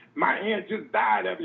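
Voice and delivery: raw, ragged screaming, pitched way up. Retelling a store worker's outburst: imitating someone screaming. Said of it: "started screaming".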